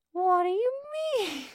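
squeaked out at a very high pitch. Reading the flounder story aloud, voicing the wife's question with a Mickey Mouse-like voice. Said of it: "She kind of sounds like a Mickey Mouse now".

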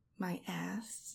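soft, hushed, teasing whisper. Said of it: "things I'm whispering in your ear".

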